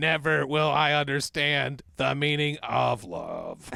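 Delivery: put-on robot voice. Joking about an AI-generated lady who talks: robot voice. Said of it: "how did they invent the fucking robot voice?".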